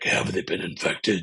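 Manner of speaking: ridiculously deep, bottomed-out, super low voice. A voice actor demonstrates his character's line, in a super low voice. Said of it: "just that super low voice".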